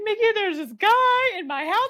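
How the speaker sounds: mock near-tears voice. Retelling a sister's phone call about a salesman: imitating someone near tears. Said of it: "on the verge of tears".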